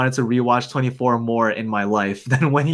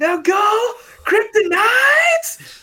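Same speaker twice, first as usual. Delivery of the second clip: screaming, pitched way up. Retelling a movie scene where a character on fire screams orders: imitating Nicolas Cage screaming orders. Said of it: "screaming orders at her".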